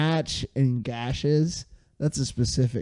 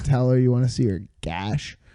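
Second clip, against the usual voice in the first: normal talking voice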